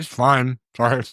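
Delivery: chewing while talking, mouth full. Answering a question about the second taste, chewing while talking. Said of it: "I'm chewing into the microphone".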